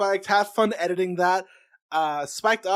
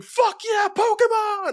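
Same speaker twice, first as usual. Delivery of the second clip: put-on very high, drunken screaming cheer; 4 dB louder than usual. Imagining frat party guests answering a question: imitating drunken screaming. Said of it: "drunkenly screaming".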